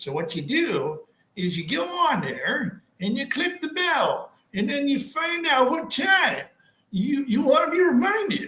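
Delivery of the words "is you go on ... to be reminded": hammed-up put-on old person voice, high. Explaining how to click the notification bell, put-on old person voice. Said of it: "that was my best, uh, Gus".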